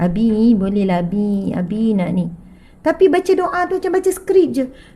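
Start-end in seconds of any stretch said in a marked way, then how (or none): 0.0-2.2 slow, coaxing, wheedling begging tone. Acting out asking Abi for money to buy things, mock-pleading, coaxing tone. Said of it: "nada suara merayu-rayu".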